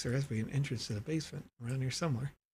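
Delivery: grave, serious voice, kept soft. Voicing a character while playing through a game, in a serious voice. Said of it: "A serious voice".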